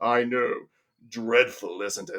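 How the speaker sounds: bad, gloomy impersonation, dreary and resigned. Quoting Marvin's line in a terrible Alan Rickman impersonation. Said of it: "That's a terrible impersonation".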